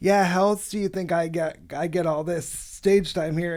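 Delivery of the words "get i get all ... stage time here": normal talking voice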